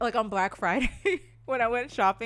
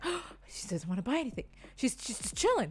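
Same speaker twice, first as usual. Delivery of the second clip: put-on livelier voice, suddenly perked-up and brightened; 3 semitones higher, 6 dB quieter than usual. Retelling the store worker's reaction to a freebie: imitating someone suddenly perking up. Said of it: "he perked up".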